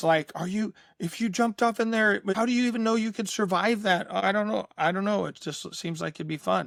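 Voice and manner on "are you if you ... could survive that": mock panicked, worried, frantic, pitched-up voice. Retelling how she questioned him about jumping in, imitating frantic worry. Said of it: "she loses her mind".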